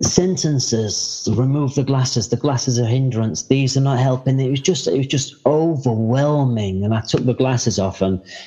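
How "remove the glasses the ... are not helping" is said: usual speaking voice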